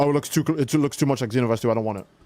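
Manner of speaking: ordinary talk, nothing marked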